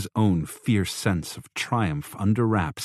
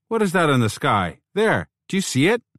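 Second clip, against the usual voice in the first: affronted, slightly fearful shout, high and loud; 9 semitones higher, 5 dB louder than usual. A man in the street outside shouts questions, offended, a little afraid. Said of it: "He sounded offended, maybe a little afraid".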